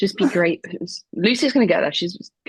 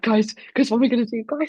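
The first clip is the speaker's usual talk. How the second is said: fake tearful panic, higher pitch; 5 semitones higher than usual. Acting out being in the line at the event: mock crying in panic. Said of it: "I'm, like, crying".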